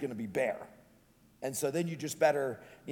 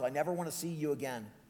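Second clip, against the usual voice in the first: mock snarling voice, quieter; 5 dB quieter than usual. Telling a story of a young man leaving his father's house, retelling a snarl. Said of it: "He snarls".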